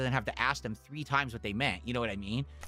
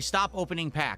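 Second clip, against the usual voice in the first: ordinary delivery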